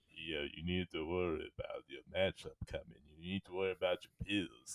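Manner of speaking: very quiet, hushed, deep movie-boxer voice. Mimicking Vin, who isn't talking like himself but just doing a Rocky impersonation. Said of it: "He's just doing a Rocky impersonation".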